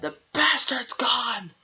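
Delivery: mock very high, angry shouted rock vocal. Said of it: "he's shouting".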